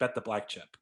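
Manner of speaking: put-on muttered voice, under the breath. Retelling a blackjack dealer's tip: imitating a dealer saying it under his breath. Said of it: "kind of quieter, like, under his breath".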